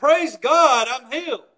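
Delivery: loud, booming, full-voiced grateful tone. Retelling a bible story, acting out the healed man's thanks: loud booming praise. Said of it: "But it was a loud booming".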